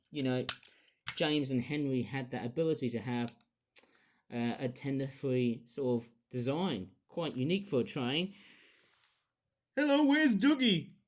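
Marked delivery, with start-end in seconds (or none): 9.7-10.8 loud, high, clumsy put-on Scottish accent. Discussing train designs, the speaker tries a line in a bad Scottish accent. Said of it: "I can't do a good a good Scottish accent".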